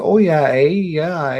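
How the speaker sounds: put-on very high-pitched Minnesota accent. Recalling a movie, the speaker does a Fargo accent impression. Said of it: "where the girl talks".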